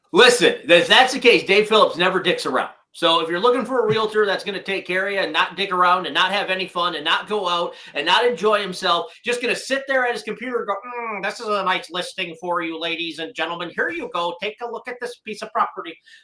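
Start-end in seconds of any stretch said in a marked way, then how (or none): 10.8-15.9 nerdy, dull, desk-bound salesman voice. Imitating a realtor friend sitting at his computer: imitating Dave as a nerd. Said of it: "That's not really what you sound like, Dave".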